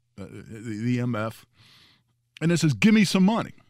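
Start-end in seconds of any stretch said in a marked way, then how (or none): 2.8-3.5 loud, high, hostile, aggressive yelling. Retelling how a man outside a theater demanded money: imitating an aggressive yell. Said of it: "this guy yells at me".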